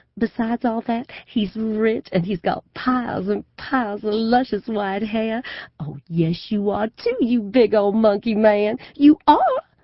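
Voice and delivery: exaggerated southern drawl, pitched high, stretched-out vowels. Narrator retelling her mother's phone call, in an exaggerated Southern accent. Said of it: "now to have to explain about my crazy mother and her fortune-telling and her life of serial marriages, ... and just from the way she's gone all southern, I can tell she's in a crowd of people, and that she's sure all of them are thinking she's just the most outrageous special person they've ever met".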